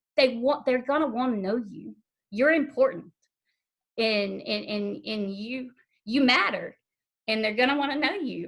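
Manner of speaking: voice catching, choking up, holding back tears. Retelling what was shared about a daughter's birth family, close to tears. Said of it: "And so I'm gonna start crying".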